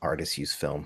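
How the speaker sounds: barely audible, low, dismissive scoffing mutter. Acting out a hypothetical reply to someone, a mock scoff under breath. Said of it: "under my breath I scoff and say".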